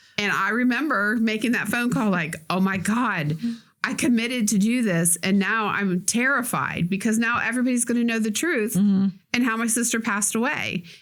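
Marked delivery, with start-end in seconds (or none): none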